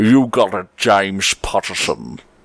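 laid-on put-on Scottish accent. Asked by a listener to say his name this way: Sean Connery accent. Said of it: "in your best Sean Connery accent".

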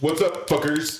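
high-pitched casual friendly voice. Imitating a friend greeting the group. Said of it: "That's Jake".

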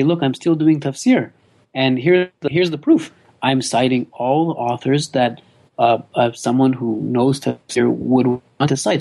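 plain

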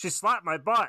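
high-pitched put-on character voice. Asked for an impression, in a Banana Guard voice. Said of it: "it's going to be the banana guard".

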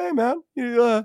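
high-pitched, very slow, easy, stretched-out voice. Retelling a teammate's question before the draft: imitating Gerrit Cole's high-pitched voice. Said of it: "he's got a kind of a interesting high-pitched voice".

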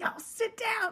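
very high, snarky bus-driver voice. Retelling a viral bus driver impersonation: bus driver impersonation. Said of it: "bus driver impersonation".

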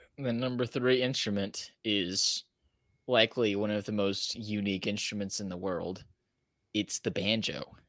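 hushed, stifled laugh, straight face barely holding. Revealing the number three instrument on a countdown, trying to keep a straight face. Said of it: "He couldn't say it with a straight face".

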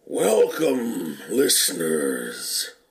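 deep, swooping robot character voice. Podcast host welcoming listeners, doing a Transformers character impression. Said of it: "That is my impression of every character in this movie".

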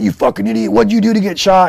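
play-acted, very high, rasping, scolding shrill yell. Retelling how Fausto yelled about getting shot: imitating Fausto yelling. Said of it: "yelling at".

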